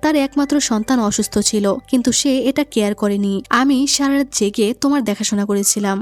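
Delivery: ordinary delivery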